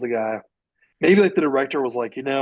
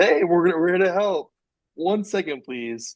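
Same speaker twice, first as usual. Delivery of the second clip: put-on polite, high customer service voice; 5 semitones higher than usual. Retelling how he answered people on the phone, in a customer service voice. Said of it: "he took the customer service voice and said".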